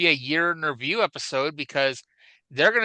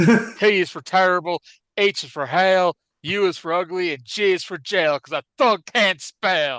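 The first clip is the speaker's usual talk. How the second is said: loud, slow, drawn-out, belted delivery; 3 semitones higher, 5 dB louder than usual. Doing an impression of Tracy Smothers saying what thug stands for. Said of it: "I can do the impression of Tracy Smothers".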